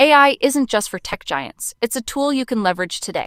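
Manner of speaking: encouraging tone. Demonstrating an ai voice tool, playing a sample in an encouraging tone. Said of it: "an encouraging one".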